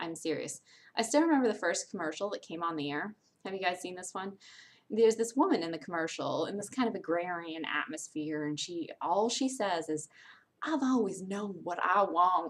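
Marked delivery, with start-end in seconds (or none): 10.6-12.5 put-on Southern accent. Retelling a woman's line from a dating-site commercial: imitating a Southern accent. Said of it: "Just in the Southern accent and everything".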